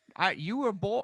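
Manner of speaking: swooping high movie voice. Trying out a joke about David Foster Wallace: Bane voice. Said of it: "in Bane's voice".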